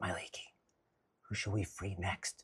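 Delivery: very quiet, hushed whisper. Voicing a character who whispers down to Walnut: whispering in character. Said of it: "I'm gonna whisper down to Walnut and I say".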